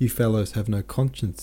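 plain

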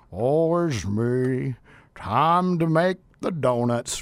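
very low, drawn-out character voice. Describing workers who dread coming to work: Eeyore impression. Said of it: "doing my best Eeyore impression".

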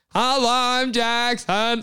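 animal-like creature voice. Describing what a skinwalker sounds like, a skinwalker imitating a human voice. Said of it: "like an animal talking".

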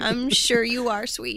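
fake, patronizing, condescending talking-down tone. Replying to someone who calls himself a beautiful butterfly: mock condescending voice. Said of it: "Your condescension voice is, is really bad".

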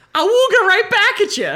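high, loud, excited, giddy flirty tone. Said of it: "I would be like".

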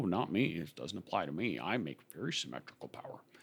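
put-on very hushed, quiet elderly grandpa voice. Speaker addressing listeners, voicing their denial, old grandpa voice. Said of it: "That's the grandpa voice".

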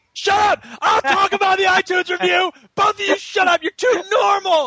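very high, shrill, playful joking yell. Cutting in on the others about the iTunes review: mock shouting. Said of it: "you're the one who shouts a lot".

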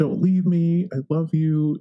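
mock screaming. Retelling being screamed at through the kitchen door: imitating someone screaming. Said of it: "he was basically screaming, like".

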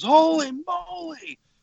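very high screech, "moly" held long. Describing a tape where a man screams during the quads solo, acting out the scream. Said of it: "he just screams".

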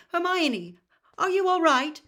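trembling, shaky, high, very loud call. A man striding toward the youngsters asks after them, in a shaky voice. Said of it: "His voice sounded shaky".

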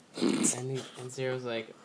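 ordinary delivery

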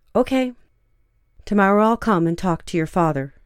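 ordinary delivery

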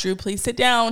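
polite, nice, sweet mommy voice. Retelling asking a child to sit down at the barbershop, nice mommy voice. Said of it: "Trying to use my nice mommy voice".

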